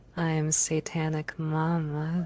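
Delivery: fake sexy seductive voice, drawn-out mama. Speaking while another speaker complains she has the porn voice on: put-on porn voice. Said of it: "she has the porn voice on".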